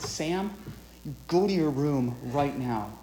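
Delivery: low, clenched-teeth voice. Recounting a father ordering his son to his room, low voice through clenched teeth. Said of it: "He lowered his voice. His teeth were clenched".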